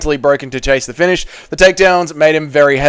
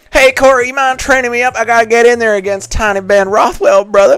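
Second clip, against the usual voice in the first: tiny, shrunken, pitched-up high voice; 7 semitones higher than usual. Answering a chat request to do a Tiny Bryce Mitchell impression. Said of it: "Can you do an impression of Tiny Bryce Mitchell?".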